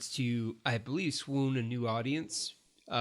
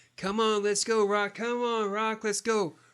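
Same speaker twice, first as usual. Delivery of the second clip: mock, high-pitched screaming; 10 semitones higher, 5 dB louder than usual. Retelling a movie scene where Adonis runs the streets: imitating Adonis screaming. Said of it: "as he's screaming for Rocky".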